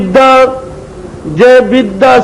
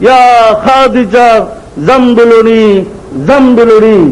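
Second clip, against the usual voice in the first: plain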